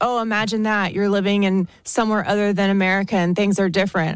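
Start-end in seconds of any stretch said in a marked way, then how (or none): none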